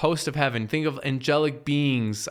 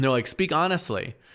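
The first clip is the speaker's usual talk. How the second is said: ordinary talk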